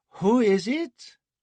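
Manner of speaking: very high, drowsy called-out voice. A trembling woman answers a knock at the door, calling out in a sleepy voice. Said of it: "calling out in a sleepy voice".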